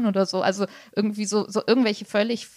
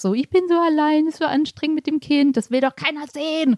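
whiny, complaining moan, pitched higher; 7 semitones higher than usual. Describing a character who mocks a widower, imitating the widower's whiny complaining. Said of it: "jammerige Elternding des Witwers".

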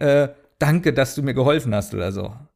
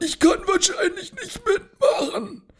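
very high, strained, hoarse, raspy voice; 4 dB quieter than usual. Retelling a voice message from another podcast participant, imitating a hoarse voice. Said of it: "ich bin heiser".

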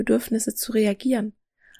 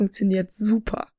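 voice oozing with heavy, dripping sarcasm. Mocking fear-based campaigns for healthier eating: heavily sarcastic. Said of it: "du hörst, wie meine Stimme vor Sarkasmus tropft".

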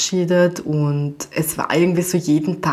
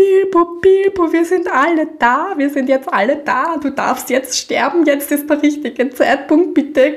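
put-on frantic, hysterical pleading, very high; 11 semitones higher, 4 dB louder than usual. Retelling when Bilbo fell over, the speaker is acting out own past hysteria. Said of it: "Und ich werde voll hysterisch, so".

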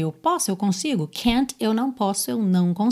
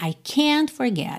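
heavy stress on can't; 3 semitones higher than usual. Teaching english negatives, where the vowel carries emphasis: stress on can't. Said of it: "você vai ter uma ênfase maior nessa vogal".

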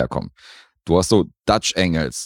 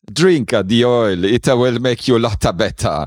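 super bad, put-on Italian accent, pitched up; 6 semitones higher, 3 dB louder than usual. A scene where a line is delivered in a bad exaggerated Italian accent. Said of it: "mit diesem super schlechten Luigi-Akzent".

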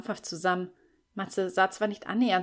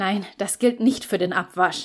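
slightly irritated, louder; 6 dB louder than usual. Narrator reads a man's answer to her weak question, slightly irritated. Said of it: "entgegnete Lukas leicht gereizt".

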